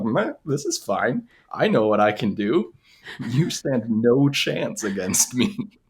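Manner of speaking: play-acted serene, unbothered, very calm, even delivery. Retelling what a character said during a fight, acting it out very calmly. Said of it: "very calmly just being like".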